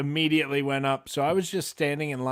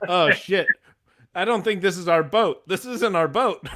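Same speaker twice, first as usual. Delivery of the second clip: loud, high, bewildered, confused, out-of-place voice; 5 semitones higher, 6 dB louder than usual. Describing the Monsters of Rock cruise, playing a mock-confused dad on the wrong ship. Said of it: "I look like the dad who got on the wrong ship".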